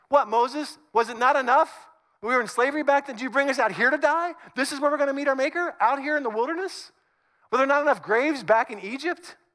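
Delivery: mock sarcastic complaining. Retelling the frightened people's complaint to their leader: acting out sarcastic complaint. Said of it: "I love good sarcasm".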